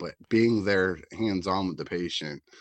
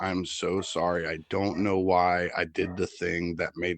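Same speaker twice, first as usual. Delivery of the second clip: mock bawling, sobbing voice. Retelling what a crying patient said while apologizing: imitating someone bawling. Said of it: "bawling his face out, and he's like".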